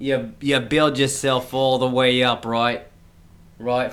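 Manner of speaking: put-on New Jersey accent drifting off. Joking about coming up from new jersey, the speaker does a new jersey accent drifting off. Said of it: "You're getting into a different accent there".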